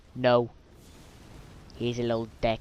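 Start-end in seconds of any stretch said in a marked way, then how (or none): none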